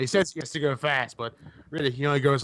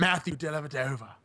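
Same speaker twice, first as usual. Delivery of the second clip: put-on, partial Australian accent; 2 semitones higher, 4 dB quieter than usual. Answering a request to say the name in an australian accent: put-on australian accent. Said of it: "How do you say that in Australian?".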